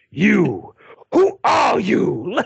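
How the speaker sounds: play-acted furious anger, rough and swooping. Retelling the villain confronting the french teacher, mock fury. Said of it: "so fucking furious and angry".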